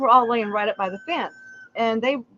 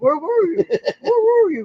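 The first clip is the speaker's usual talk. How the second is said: very high, sing-song, swooping, bouncy cartoon dog voice; 10 semitones higher, 4 dB louder than usual. Retelling how the dog greets them at the gate, in a Scooby-Doo style voice. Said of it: "More like Scooby Doo style".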